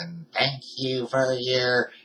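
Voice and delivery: flat, robotic, machine-like female announcer tone. A speaker retells a message that a voice read out, robotic woman's voice. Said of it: "I can't do a better woman voice than that".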